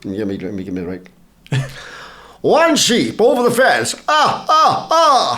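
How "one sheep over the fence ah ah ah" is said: very high, very slow, swooping, drawn-out drawl. Asked to do a bit for everyone, speaker does The Count voice. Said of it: "the count goes".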